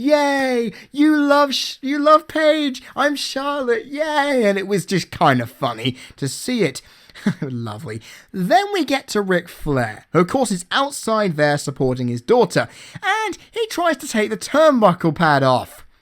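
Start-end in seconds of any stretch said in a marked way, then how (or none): 0.0-4.4 sarcastic cheer, high and slow, yay drawn out. Recapping a wrestling match, imitating Charlotte's sarcastic cheering at the crowd. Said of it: "I'm going to sarcastically applaud and go".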